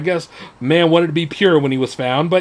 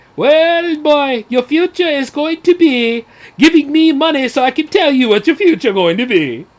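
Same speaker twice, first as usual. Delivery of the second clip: bad, terrible put-on TV psychic accent, high; 9 semitones higher than usual. Imitating a TV telepsychic telling callers their future, in a terrible put-on accent. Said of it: "that's a terrible accent".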